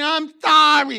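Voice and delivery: loud, put-on fake New York accent. Telling a Bible story with New Yorkers listening, put-on New York accent. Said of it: "I'm saying it with a New York accent on purpose".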